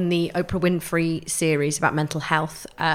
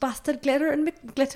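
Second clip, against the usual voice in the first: put-on Geordie accent, pitched much higher; 10 semitones higher than usual. Friends take turns attempting a quote in a Geordie accent; Jade Geordie impression. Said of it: "I can't do Geordie".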